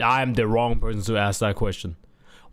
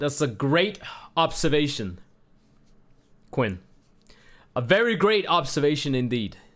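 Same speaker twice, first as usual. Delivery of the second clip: sarcastic, mocking, insincere tone; 4 semitones higher than usual. Replying to Quinn's obvious remark about the game: sarcastic. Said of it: "I'm being sarcastic".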